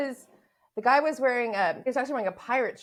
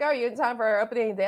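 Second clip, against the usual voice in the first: teasing, half-serious, half-joking tone. Retelling what the speaker said to a Mets fan at work, retelling a half-joking remark. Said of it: "Like half joking".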